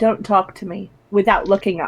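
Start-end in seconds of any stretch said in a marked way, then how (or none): 0.0-0.9 very quiet, soft, hushed. Narrating a character who answers without looking up, very quietly. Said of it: "Majid very quietly says".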